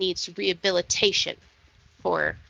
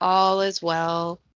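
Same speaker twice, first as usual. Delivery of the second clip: droning, flat, tuneless monotone group reply. Storyteller voices the townsfolk all echoing the words back: monotone crowd echo. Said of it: "Very monotone".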